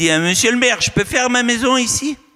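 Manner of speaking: put-on Parisian accent. Telling a story, the speaker acts out a tourist asking the mayor, Parisian tourist accent. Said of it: "avec le bon accent parisien".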